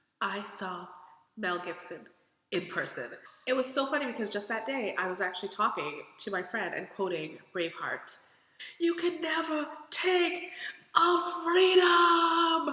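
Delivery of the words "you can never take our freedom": loud, high, slow, belted rallying shout. Quoting a line from Braveheart to a friend: Braveheart quote. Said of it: "I don't sound anything at all like he did".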